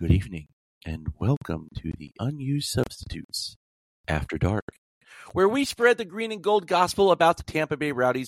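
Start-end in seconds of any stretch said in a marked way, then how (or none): 0.0-4.7 swooping late-night radio DJ host voice. Host opening the show's late-night edition, in a Quiet Storm radio-show voice. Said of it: "I should be doing this in like a Quiet Storm radio show voice".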